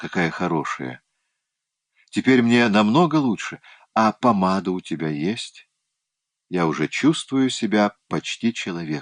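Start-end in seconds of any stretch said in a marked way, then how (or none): none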